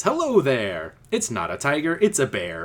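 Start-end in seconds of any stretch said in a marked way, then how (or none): 0.0-0.9 glad, cheerful, happy voice. Reading an adventure story aloud, a bear greets the hiders in a happy voice. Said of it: "A happy voice says".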